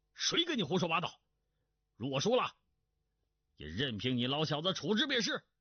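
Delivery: barking, barked sharply. Reading a story, one man answers another's challenge during a wager, shouting. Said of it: "喝道".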